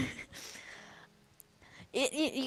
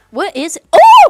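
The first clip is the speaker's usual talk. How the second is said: high, loud, excited outburst. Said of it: "I got really excited about Twisted Fate".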